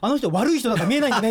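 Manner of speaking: put-on loud, fast, laughing child's blurt.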